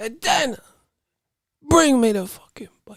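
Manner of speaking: put-on very high voice with a thick Cuban accent. Repeating what a fighter said to Dana, as a Yoel Romero impression with a thick Cuban accent. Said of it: "he had that thick Cuban accent".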